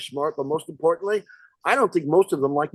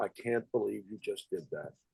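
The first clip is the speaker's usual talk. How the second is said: grave, earnest, deadly serious, very low and very quiet; 8 semitones lower, 14 dB quieter than usual. Retelling Gene Siskel's reaction after Roger Ebert spoiled the ending: imitating Gene Siskel, dead serious. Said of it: "Gene Siskel is so, so serious".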